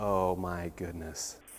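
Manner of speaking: drawn-out slow delivery. Retelling what a normally fast-talking driver said, in a very slow voice. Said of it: "said in a very slow voice".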